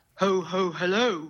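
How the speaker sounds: put-on posh character voice. A caller playing Father Christmas greets the host on the line, in a posh Santa voice. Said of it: "that's a posh Santa".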